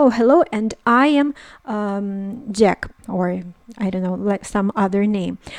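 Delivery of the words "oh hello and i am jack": normal talking voice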